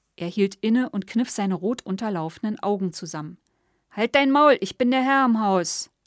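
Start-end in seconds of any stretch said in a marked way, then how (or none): 3.9-5.8 booming, loud, thundering roar. Gustav answers Grete, who blocks his way to the kitchen, thundering. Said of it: "donnerte er".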